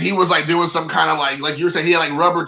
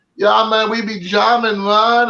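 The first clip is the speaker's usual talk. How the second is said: slow, unhurried, laid-on put-on Jamaican accent; 4 semitones higher than usual. Retelling a guy talking to him in a restroom, imitating a jamaican accent. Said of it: "try to talk to you with a Jamaican accent".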